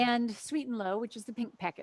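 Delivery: ordinary delivery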